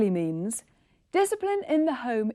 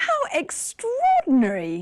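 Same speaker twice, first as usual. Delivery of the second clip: even more surprised, high, swooping, astonished exclamation; 5 semitones higher, 3 dB louder than usual. Showing that more surprise makes the voice go higher: more surprised, voice even higher. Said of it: "your voice goes even higher".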